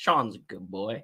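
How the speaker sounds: Southern accent. Showing how the southern accent slips out: southern accent. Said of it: "you'll see the Southern accent start to".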